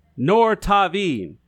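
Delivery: slow, deliberate, carefully laid-out pronunciation. Teaching someone a phrase in Draconic, said slowly. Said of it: "I say it slowly".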